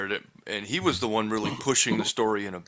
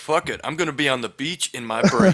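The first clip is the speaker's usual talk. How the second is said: ordinary talk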